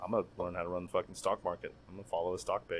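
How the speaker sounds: half-whispered, hushed, dead serious. Answering what they would pick, half-whispering. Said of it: "Why are you whispering?".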